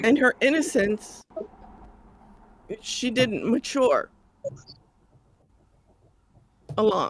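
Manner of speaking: crying, tearful voice while talking. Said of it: "I'm crying about her".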